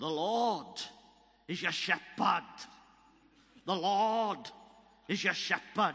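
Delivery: put-on thick, broad Welsh accent, very loud. Recalling a man who delivered a prophecy to the speaker, broad Welsh accent. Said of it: "this broad Welsh accent".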